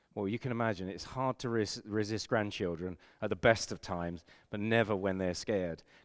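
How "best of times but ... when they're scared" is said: normal talking voice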